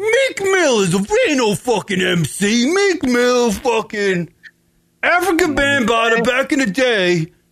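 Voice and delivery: slow high-pitched yelling rant. Mocking the yelling Instagram rants: imitating Michael Rappaport yelling. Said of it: "Stop it, Michael Rappaport".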